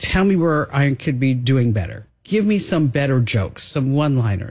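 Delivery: ordinary delivery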